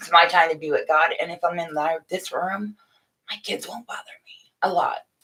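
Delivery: hushed whisper. Talking live to her friends from a room away from her kids: whispering. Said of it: "I don't know why I'm whispering".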